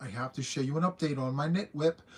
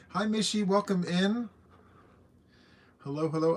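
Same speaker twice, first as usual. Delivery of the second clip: loud, raised, shouting voice; 4 semitones higher than usual. Host greets viewers joining the stream by name, shouting. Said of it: "I'm sorry if I'm shouting".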